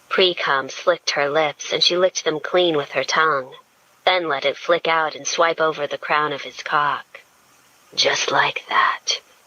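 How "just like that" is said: low, husky male voice. Reading a story aloud, a character encourages his partner: husky voice. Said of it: "he told her in a husky voice".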